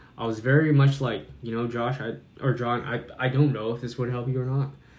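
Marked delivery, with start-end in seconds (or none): 1.4-4.7 put-on nonchalant, slow tone. Retelling own words from an earlier conversation: imitating own nonchalant slow tone. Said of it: "My tone was very slow".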